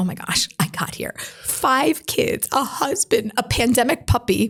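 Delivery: words spilling out through tears, crying. Retelling own words while praying at the Kotel: retelling own tearful words. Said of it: "I'm crying".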